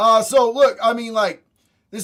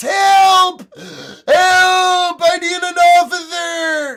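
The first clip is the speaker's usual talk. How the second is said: loud, high, very slow, stretched-out yelling; 8 semitones higher, 7 dB louder than usual. Describing protesters calling to the cops after being bumped, imitating someone yelling for help. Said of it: "they're yelling at the cops".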